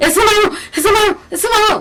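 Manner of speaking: play-acted high gasping between words, short of breath. Retelling a girl during an asthma attack while everyone searches: reenacting asthma-attack gasping. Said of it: "you know what an asthma attack sounds like".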